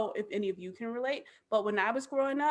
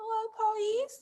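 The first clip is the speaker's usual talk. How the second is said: put-on very high, tiny toddler voice; 11 semitones higher than usual. Retelling toddler Harley spotting police outside the windows, little baby voice imitating Harley. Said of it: "in like her little baby voice".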